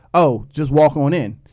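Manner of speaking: ordinary talk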